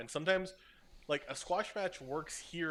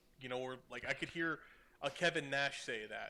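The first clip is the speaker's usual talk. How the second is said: plain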